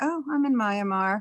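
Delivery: mock blasé, nonchalant tone. Retelling a kid's phone call from far away: imitating a blasé tone. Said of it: "very blasé".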